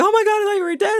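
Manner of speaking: mock, very high, emotional, losing-it outburst. Retelling a climber hugging a friend he thought dead: imitating someone losing it emotionally. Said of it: "losing it".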